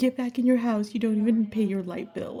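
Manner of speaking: put-on woman's yelling. Retelling how the side piece answered: imitating a woman yelling. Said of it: "she yells at the lady".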